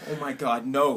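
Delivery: put-on panicked outburst, sudden alarm. Retelling finding the car door locked: imitating own panic. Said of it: "So I literally panic".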